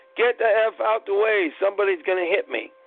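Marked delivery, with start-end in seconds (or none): none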